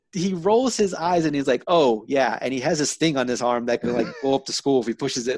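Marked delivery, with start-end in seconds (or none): none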